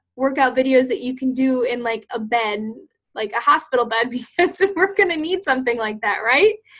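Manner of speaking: words breaking up with laughter while talking. Recalling a talk from their mentorship, laughing while talking. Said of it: "I'm laughing because".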